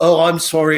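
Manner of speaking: bad, horrible, fake put-on British accent. Retelling a phone call while posing as someone else: imitating own horrible fake British accent. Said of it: "I do this horrible British accent that I'm trying to fake".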